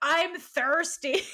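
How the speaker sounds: sinister, high-pitched, menacing witch voice. Retelling a scene where Penelope gets triggered, imitating her menacing witch voice. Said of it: "her like voice augments back into that like menacing witch plague voice".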